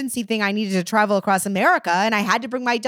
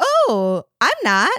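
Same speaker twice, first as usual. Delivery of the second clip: fake, bright, put-on cheerful voice. Recalling a judgy stranger, the speaker answers in a put-on happy voice. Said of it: "And then I put on my happy voice".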